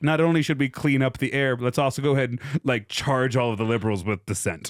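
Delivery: ordinary delivery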